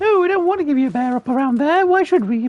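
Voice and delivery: very high, goofy voice. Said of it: "I'm mocking myself".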